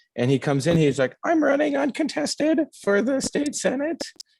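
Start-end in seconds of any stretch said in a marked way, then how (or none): 1.2-4.0 very high, meek, unsure, unconfident voice. Retelling how a candidate announced himself: imitating a high-pitched unconfident voice. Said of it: "he's got just the most unfortunate voice".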